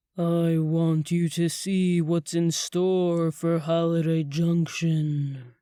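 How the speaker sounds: very deep, plunging, dropped bass voice. Stopping beside a wooden vampire coffin, he goes on in a much deeper voice. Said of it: "The tone of his voice dove three octaves deeper".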